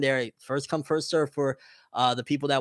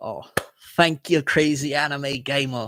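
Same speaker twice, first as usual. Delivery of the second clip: fake British accent, slower. Speaker thanks someone, slipping into a fake British accent. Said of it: "I gotta stop with the fake British accent".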